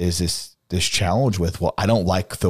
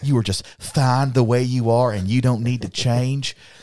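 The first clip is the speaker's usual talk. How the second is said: thick, heavily laid-on put-on Southern accent; 6 semitones higher than usual. Mocking affirming messages that say you need not change: super southern accent. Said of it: "my super Southern accent".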